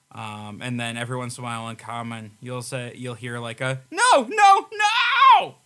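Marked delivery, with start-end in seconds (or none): 3.9-5.5 screaming wailing cry, much higher, louder, slower. Narrating a scene, voicing one of the many wailing voices, a wailing cry. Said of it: "you start to hear wails and screams".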